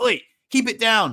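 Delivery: stern, firm, put-on fatherly voice. Telling noisy drinkers to keep it down, the speaker uses a put-on dad voice. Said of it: "put on my dad voice".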